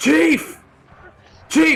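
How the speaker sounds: very high, loud hollering yell. Voicing a guard in a tabletop game, calling for his chief: guard hollering for the chief. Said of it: "He begins hollering down the".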